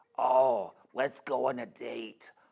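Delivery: imitated New York accent. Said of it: "I love doing accents".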